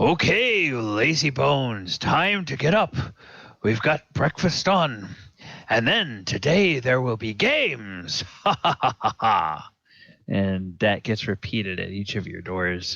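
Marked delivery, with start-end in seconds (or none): 0.0-9.7 hearty, booming, high-pitched, jovial bellow with laughter. Game master voicing Antar Froome waking the players at each door, booming Antar Froome voice. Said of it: "a booming voice that you recognize by now as Antar Froome".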